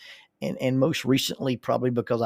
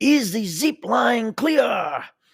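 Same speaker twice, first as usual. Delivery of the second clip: mock very high, nervous, loud shouting; 11 semitones higher, 6 dB louder than usual. Recounting a man on the zip-line tower calling down: retelling a yell. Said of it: "he yells".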